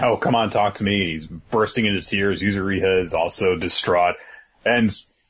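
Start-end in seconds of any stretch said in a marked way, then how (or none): none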